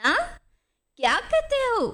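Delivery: hard-of-hearing voice. An old clerk who cannot hear the narrator asks him again; hard-of-hearing question. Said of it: "अपने कानों पर हाथ रखकर पूछा".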